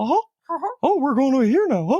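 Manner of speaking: very high cartoon voice, swooping and bouncing pitch. Telling a co-speaker about one of his first impressions, doing a Mickey impression. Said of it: "One of the first impressions I did".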